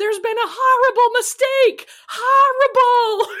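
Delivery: put-on frantic, very high, loud shriek in New England accent. Recapping a scene where two women switch outfits, the speaker retells Sydney's yell, New England accent. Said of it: "she yells in her New England accent".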